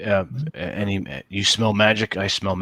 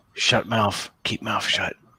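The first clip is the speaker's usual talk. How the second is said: hushed, voiced stage whisper. Quoting what a man whispered during a story: retelling a whisper. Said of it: "He whispers".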